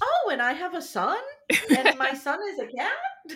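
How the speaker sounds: put-on high, loud, startled, amazed-by-everything delivery. Complaining about a guy the speaker dislikes, imitating Ben sounding surprised. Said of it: "He talks like he's like surprised all the time".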